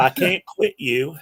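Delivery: very slow, rural backwoods Southern drawl. Two speakers finish each other's sentences; one says this in a Deliverance kind of accent. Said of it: "in a deliverance kind of accent".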